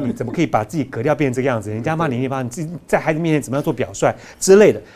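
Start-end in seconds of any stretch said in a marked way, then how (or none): none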